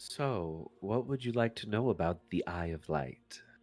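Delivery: low, hushed voice. In a secluded area of the guild, asking both companions, lowered voice. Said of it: "Lilith lowers her voice and says".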